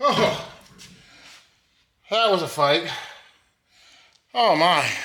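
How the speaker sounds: out of breath, catching breath. Speaker coming back after a tough struggle, out of breath. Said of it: "Catch my breath".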